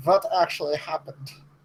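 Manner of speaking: put-on speaking with a German accent. In a roleplay, a character asks what actually happened, in a German accent. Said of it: "you're doing a German accent as well".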